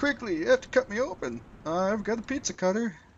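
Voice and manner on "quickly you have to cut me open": put-on elderly man's voice, pitched high. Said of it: "I'm gonna give him an old man voice".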